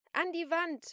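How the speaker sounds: piercing scream, very high and very loud. Celine screams orders at a pleading woman: screaming. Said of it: "schrie Celine".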